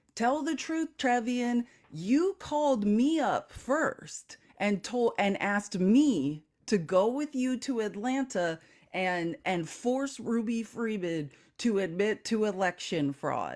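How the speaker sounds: plain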